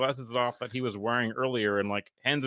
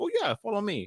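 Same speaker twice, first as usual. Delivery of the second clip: put-on Russian accent, pitched up, street hustler; 9 semitones higher than usual. Retelling how a dude in Tijuana answered him about Oakleys: Russian accent. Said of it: "have a Russian accent?".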